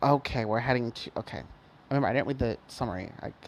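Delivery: ordinary delivery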